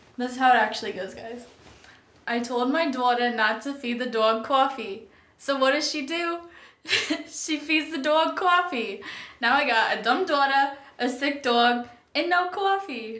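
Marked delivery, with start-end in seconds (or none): 2.3-13.2 slow put-on Boston accent held all the way through. Asked to do the Boston accent, the speaker performs a joke in a Boston accent. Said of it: "do your Boston accent?".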